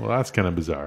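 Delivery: plain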